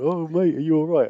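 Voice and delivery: worried, caring tone. Retelling someone from the band checking on the speaker, imitating someone really worried. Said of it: "looking at me like really worried".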